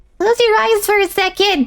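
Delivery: small character voice. Voicing a small game character's line in a higher-pitched voice. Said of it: "I'm making her voice higher because she's small".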